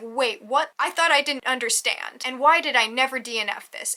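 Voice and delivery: ordinary talk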